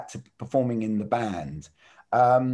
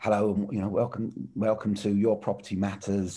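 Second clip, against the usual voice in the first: put-on formal presenter delivery; 3 semitones lower, 4 dB quieter than usual. Recalling filming himself with the camera held out, retelling his formal intro. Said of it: "I was being really formal at first".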